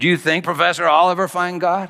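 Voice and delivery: snarky, needling tone. Retelling an atheist student handing in his final exam, acting out his snarky question. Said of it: "with a snarky voice".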